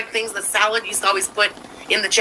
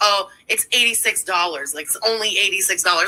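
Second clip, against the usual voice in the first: ordinary talk, nothing marked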